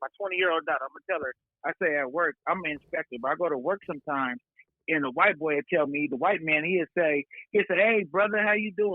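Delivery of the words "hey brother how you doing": mock slang talk, pitched higher. Retelling how a man at work greets him: imitating a slang voice. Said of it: "talk with, like, a slang voice".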